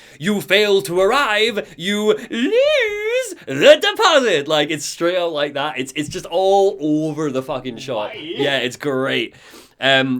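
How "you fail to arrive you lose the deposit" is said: acted high, slow monster shout, lose stretched out. Describing a game boss fight where the monster shouts at you: Carl Stucky monster shout. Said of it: "he shouts stuff at you like".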